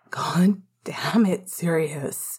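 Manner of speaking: bitter growl with voice breaking and cracking. A narrator reads Remus speaking to Sirius; bitter growl, voice cracking. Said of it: "Remus growled bitterly, his voice cracking".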